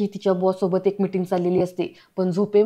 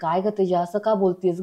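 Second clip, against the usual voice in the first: plain reading voice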